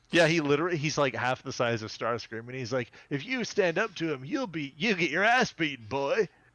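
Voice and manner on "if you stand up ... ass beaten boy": high, cocky, cool-guy swagger. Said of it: "He talks like a cool guy".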